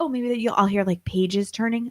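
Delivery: normal talking voice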